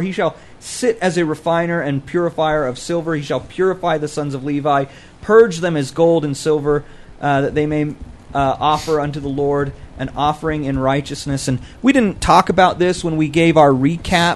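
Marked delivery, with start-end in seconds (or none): none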